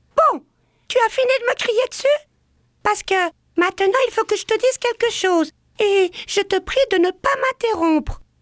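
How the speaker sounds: small, birdlike voice, very high pitched. Retelling how the speaker answered someone yelling, in a small bird-like voice. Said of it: "de ma petite voix d'oiseau".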